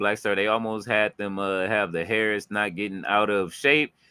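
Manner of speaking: ordinary delivery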